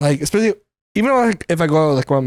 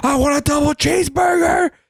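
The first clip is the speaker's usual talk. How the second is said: play-acted shrill, very high screamed words; 11 semitones higher than usual. Recalling customers yelling into a taped-up drive-through speaker, imitating people screaming. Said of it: "watching people scream at the fucking thing".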